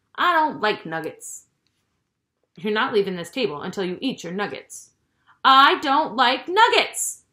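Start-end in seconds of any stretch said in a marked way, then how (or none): 5.5-7.2 high, very loud, drawn-out screeching shriek. [name] answers Eve at the table, shrieking. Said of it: "[name] shrieked".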